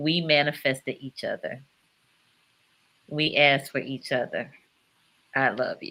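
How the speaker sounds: choked up, emotional, about to cry. Responding warmly to the listener, choked up. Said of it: "I get choked up".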